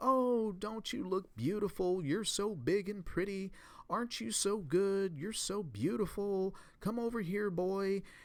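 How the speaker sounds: put-on, high, gushing, sweet coddling voice. Quoting a man's story of talking to a dog, retelling coddling dog talk. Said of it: "I'll talk in a coddling voice".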